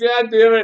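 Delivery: exasperated groan, high-pitched and loud.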